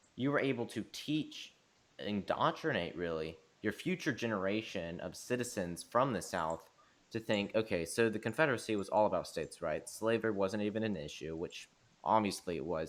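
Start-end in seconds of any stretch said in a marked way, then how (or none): none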